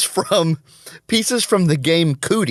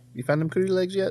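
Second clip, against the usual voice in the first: fast, soft, creepy stranger character voice. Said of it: "you gotta say it just like that".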